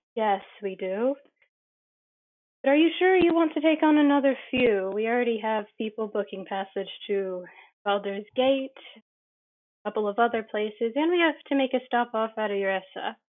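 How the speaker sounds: sighing character voice. Voicing Rosahi as she answers the captain, sighing. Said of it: "She sighs".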